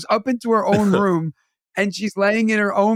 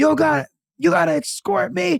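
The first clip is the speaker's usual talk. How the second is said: higher-pitched put-on man's screaming rant; 8 semitones higher than usual. Retelling how a man escorted by police acted: imitating a man screaming. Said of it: "And he's screaming".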